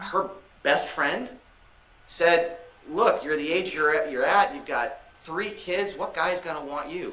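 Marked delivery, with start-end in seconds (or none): none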